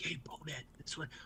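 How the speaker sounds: very quiet, hushed whisper, barely voiced. Retelling talking to a comrade who can't hear: retelling a whisper. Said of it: "we're trying to whisper".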